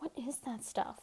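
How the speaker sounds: soft, hushed whisper. Juice asks the others a question in the cell, whispered. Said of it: "whispered Juice".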